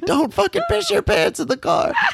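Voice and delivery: very high scolding yell through laughter. Retelling a video where she yells at the speaker in the car, imitating laughing while yelling. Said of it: "she was like laughing as she's yelling at me".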